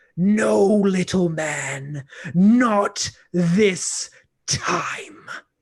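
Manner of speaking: drawn-out delivery, stressed word man. Game master voicing the troll with its clawed hand on Thunk's forehead, Hagen the Troll King voice. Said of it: "Will [name] the Troll King be able to grapple [name], / And he grabs his one clawed hand and puts it on your forehead and says, ... and you drive your fingers beneath the metal plates on his chest, /".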